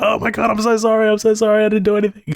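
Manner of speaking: put-on tearful sobbing, very high pitched. Retelling being caught, the speaker acts out his past plea: imitating his own crying. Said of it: "I was I was crying".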